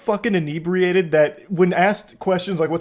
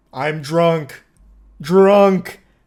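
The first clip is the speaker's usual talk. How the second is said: loud, blunt caveman talk, one word at a time; 5 dB louder than usual. Retelling what the drunk driver said: imitating Wayne's caveman speech. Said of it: "Speaking like a caveman".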